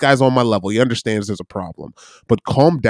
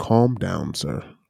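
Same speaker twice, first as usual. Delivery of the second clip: soft, superior, patronising, condescending talking-down tone; 3 semitones lower, 6 dB quieter than usual. Showing how 'calm down' is always said: mock-condescending tone. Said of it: "Calm down is always done in a condescending, I am of better emotional state than you".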